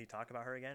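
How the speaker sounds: ordinary talk, nothing marked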